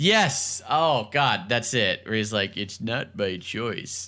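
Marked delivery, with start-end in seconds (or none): 2.6-4.1 familiar old cartoon dog voice. Quoting a character's line from a show: Droopy Dog voice. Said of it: "It definitely sounds like, uh, Droopy Dog".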